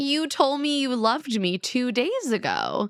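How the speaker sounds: acted angry voice. Retelling how Kate reacted to Nick's news: imitating an angry Kate. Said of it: "And Kate is pissed".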